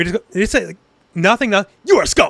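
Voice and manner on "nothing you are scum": curt, stiff, stilted delivery like a bad dub. Quoting a character's line from the dub being watched, Dynasty Warriors-style dub line. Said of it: "in such a weird like Dynasty Warriors kind of way".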